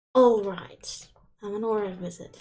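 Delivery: irritated muttering. In a tabletop game, the narrator voices Thanos folding his arms, quiet annoyed mumble. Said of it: "he just quietly mumbles to himself, a bit annoyed".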